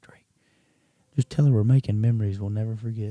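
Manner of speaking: hushed, secretive half-whisper, close to the ear. Retelling half-whispering into a friend's ear during a phone call: retelling a half-whisper. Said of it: "I whisper in his ear".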